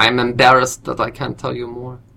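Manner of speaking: put-on morphing, almost-French accent. Suggesting what someone could have said instead, in an almost-french accent. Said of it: "What accent is that?".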